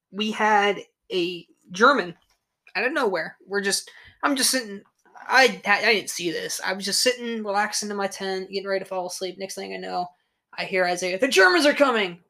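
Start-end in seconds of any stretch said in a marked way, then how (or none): 11.2-12.1 put-on, loud, high, full-throated shout. Telling of relaxing in a tent when someone shouted a warning: retelling a yell. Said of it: "what the hell are you yelling about?".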